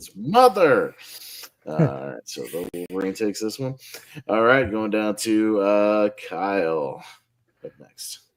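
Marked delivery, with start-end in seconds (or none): 0.0-0.9 loud, high-pitched exclamation. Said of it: "you have to say it like that with the exclamation mark".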